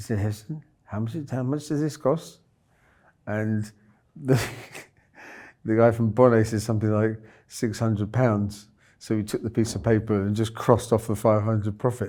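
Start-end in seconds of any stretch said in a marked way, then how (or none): 0.2-2.4 put-on softly, gently spoken Indian accent. Retelling what Aki asked him, in Aki's soft Indian accent. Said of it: "his softly spoken Indian accent".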